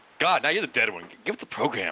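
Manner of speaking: put-on, snarky, catty, sarcastic, bitchy, swooping put-down. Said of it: "just being sarcastic, like, uh, bitchy".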